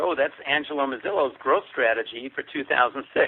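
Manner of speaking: ordinary delivery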